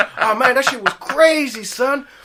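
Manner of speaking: very loud, very high play-by-play commentary. Retelling a bystander's running commentary on a cyclist crash: imitating a bystander. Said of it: "And he goes".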